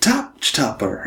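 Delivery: high, slow announcer call. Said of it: "It says".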